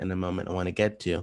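rushed, very fast talk.

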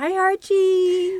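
high, slow, cooing pet-talk voice.

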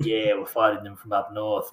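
strong put-on bogan Australian accent. Explaining the trash talk against Northerners, showing it in a bogan Australian accent. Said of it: "put on your really ochre bogan Australian accent".

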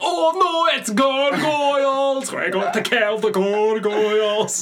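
put-on very high, slow, drawn-out Scottish accent. Imitating the panicked cartoon villagers: Glomgold-like Scottish accent. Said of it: "They all sounded like, um, what was his name? Glomgold".

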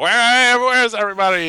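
put-on very high, shrill, posh, kind-of-British 1950s TV accent. Recapping a tv episode, quoting a character in a weird 50s tv accent. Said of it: "In that weird 50s TV accent".

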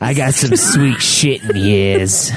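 put-on New York accent. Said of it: "a grown-up adult in a New York accent".

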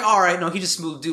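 ordinary talk, nothing marked

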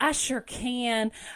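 slow, drawn-out, exaggerated thick Southern drawl. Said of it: "Southern accent; exaggerated Southern accent".

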